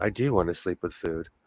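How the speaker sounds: very deep, low, hushed, soft chocolatey tone. In a joking group chat, the speaker switches into a chocolatey voice. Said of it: "let me get my chocolatey voice".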